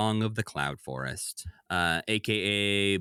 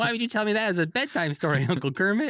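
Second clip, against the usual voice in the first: terrified, scared, very high-pitched voice; 12 semitones higher than usual. Imagining Robin hearing a scary bedtime story from Uncle Kermit: terrified Robin voice. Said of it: "And Robin is terrified".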